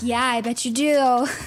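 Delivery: put-on condescending, patronizing voice. Retelling a story, quoting the boyfriend: imitating a condescending tone. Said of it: "Patronizing my yandere girlfriend".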